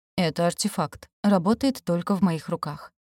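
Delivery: plain reading voice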